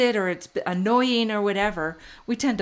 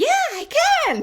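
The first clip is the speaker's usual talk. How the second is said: put-on very high, loud, cute little kid voice; 5 dB louder than usual. Retelling a little boy's answer, in that cute little voice. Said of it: "in that cute little voice".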